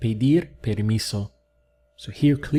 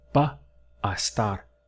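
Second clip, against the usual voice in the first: slow delivery, each word and syllable separated; 2 semitones lower, 3 dB quieter than usual. Showing a learner how the words sound when said slowly and separated. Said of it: "There you can hear that I separated it".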